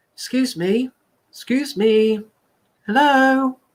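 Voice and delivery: very high, timid, mousy squeak. Demonstrating how someone lacking self-confidence talks, mouse voice. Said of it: "we have the mouse voice".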